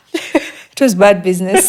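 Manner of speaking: laughing speech.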